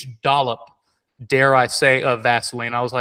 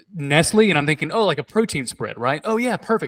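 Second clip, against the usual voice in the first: ordinary talk, nothing marked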